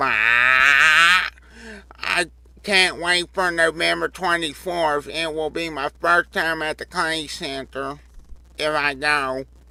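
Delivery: high, loud voice with "I" stretched out. Reading a holiday message from Lucas the Parrot, in Lucas the Parrot voice. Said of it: "I'm going to do it in his voice".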